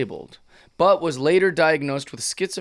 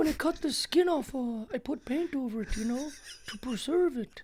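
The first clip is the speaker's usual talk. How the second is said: put-on odd old man voice, higher and quieter; 10 semitones higher, 9 dB quieter than usual. Mimicking how an actor made a character speak: imitating the lead's odd old-man voice. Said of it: "the lead made him speak like this".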